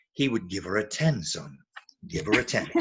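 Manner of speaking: very low-pitched voice. Speaker retelling what a voice in his head told him, very deep voice. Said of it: "this very deep sort of voice in my head said".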